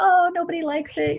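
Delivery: mock disappointed whine, pitched high.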